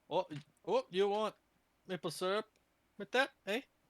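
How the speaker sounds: put-on Canadian accent. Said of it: "That's just Canadian".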